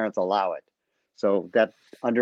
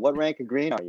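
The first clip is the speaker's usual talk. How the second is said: usual speaking voice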